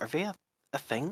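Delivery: hushed, soft, high, secretive half-whisper. Voicing Rebecca asking quietly about the pair: half-whispering in character. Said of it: "You catch the vague hints of whisper".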